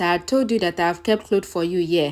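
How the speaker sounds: ordinary delivery, nothing marked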